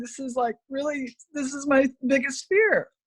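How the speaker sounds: crying with voice breaking. Speaker asking the AFA how their people will be helped, crying while speaking. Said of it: "I'm sorry, I'm crying".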